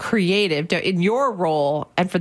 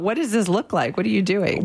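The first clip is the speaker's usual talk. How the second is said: usual speaking voice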